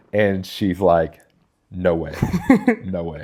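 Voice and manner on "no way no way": very slow, blunt, emphatic, swooping delivery. Retelling how she answered his idea of moving to tennessee, retelling a blunt refusal. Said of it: "I can hear that like in her voice".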